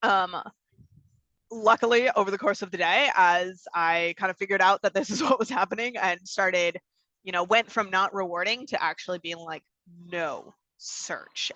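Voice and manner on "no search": low, hushed, whispered, disappointed mom voice. Recalling telling him no during a search, in a low, disappointed mom voice. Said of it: "the low, kind of disappointed mom voice".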